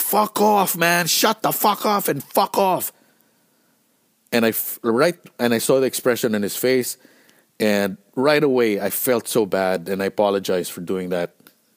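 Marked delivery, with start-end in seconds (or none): 0.0-2.9 very high, shrill screaming outburst. Retelling telling off a manager mid-show: imitating own scream. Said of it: "I screamed at him".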